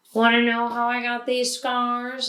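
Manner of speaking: ordinary talk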